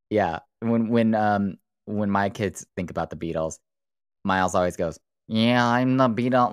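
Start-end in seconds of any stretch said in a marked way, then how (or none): 5.2-6.5 nasal British voice, higher and louder. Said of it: "he does this like nasally".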